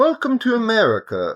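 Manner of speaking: put-on British accent. Co-host repeating a character's line just quoted, in an attempted British accent. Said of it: "Was that even British?".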